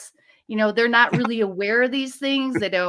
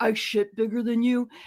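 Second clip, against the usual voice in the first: put-on grumpy old man voice. Retelling a line from a cowboy movie: imitating an old curmudgeon. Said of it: "the old curmudgeon-y guy is like".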